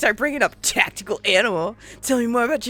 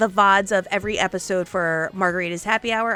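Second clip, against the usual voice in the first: normal talking voice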